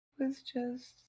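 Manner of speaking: tearful with joy. Reading kind birthday messages from others, happy crying. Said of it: "Happy crying".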